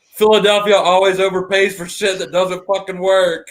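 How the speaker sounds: play-acted sudden shrill yell at full volume. Telling a story, the speaker acts out a man suddenly yelling after a long silence: retelling a top-of-lungs yell. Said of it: "at the top of his lungs yells".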